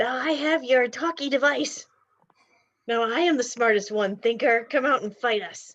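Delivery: shouted, yelling through a megaphone, loudspeaker sound. Gallywix goes over to the megaphone and wants to yell, yelling into megaphone. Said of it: "He wants to yell".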